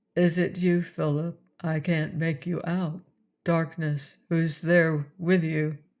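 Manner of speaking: flat, toneless, lifeless mechanical voice. Reading a story where a faint voice answers over a speaker: toneless mechanical voice. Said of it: "a mechanical, lifeless voice".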